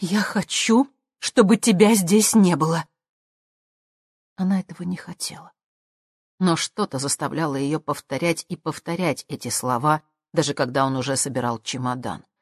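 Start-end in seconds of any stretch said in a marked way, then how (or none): 0.0-2.9 loud, sudden, blurted-out words. A woman speaks to the man packing his suitcase: blurted out. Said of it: "выпалила".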